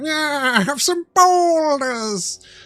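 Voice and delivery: very high voice, slow and long drawn out. Imitating a game's boulder-throwing enemy: Skeletor voice. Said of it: "went full Skeletor".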